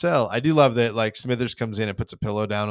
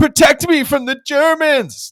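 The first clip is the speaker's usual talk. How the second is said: very high, shrill, very loud pretend terror; 11 dB louder than usual. Retelling a scene, the speaker mocks someone pleading for protection, mock-scared pleading. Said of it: "Stop the pretending you are scared game".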